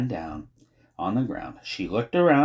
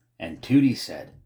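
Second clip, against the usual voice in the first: ordinary delivery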